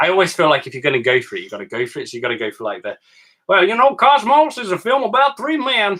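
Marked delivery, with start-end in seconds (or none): 3.5-6.0 very high, loud, exaggerated put-on American accent. Pitching the film after a request for a best american accent: exaggerated american accent. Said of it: "that's what Americans sound like, right?".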